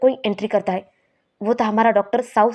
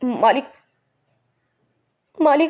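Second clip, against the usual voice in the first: tearful, crying voice thick with weeping; 3 semitones higher than usual. Butler uncle, found in a room late at night, calls for the master; crying. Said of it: "आप रो क्यों रही है?".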